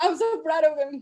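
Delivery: emotional, choked up, near tears.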